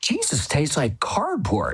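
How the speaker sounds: animated, blunt, unfiltered, blurted-out delivery. Retelling what she said with the thing in her mouth: very loudly. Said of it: "she said very loudly".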